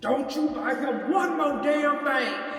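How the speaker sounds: thunderous booming voice. Retelling a mysterious voice that was heard, quoting it as a voice with thunder in it. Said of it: "it sounded like it had thunder in it".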